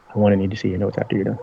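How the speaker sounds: secretive, in-character stage whisper. Walking a character off and asking to see their notes: half-whispering in character. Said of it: "I'm gonna whisper to".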